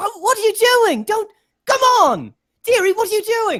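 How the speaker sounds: loud high-pitched shouting. Voicing a character shouting at someone drawing a bow: Corianne shouting. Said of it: "she's just shouting at him at this point".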